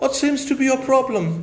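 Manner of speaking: put-on affected posh English accent, tongue-twisted. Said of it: "इंग्लिश छाड़ता टेढ़ी जबान करके".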